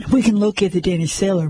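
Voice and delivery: plain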